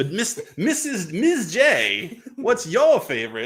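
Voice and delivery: manic villain voice, high, swooping and stretched out. Asking Miz J about her favorite, the speaker slips into a Joker voice. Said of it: "I jo- went into the Joker voice there".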